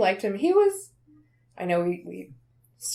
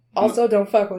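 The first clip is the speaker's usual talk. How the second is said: ordinary delivery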